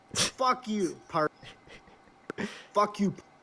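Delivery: furious outburst. Cursing at the other speaker on the stream: angry outburst. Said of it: "you still crashing out?".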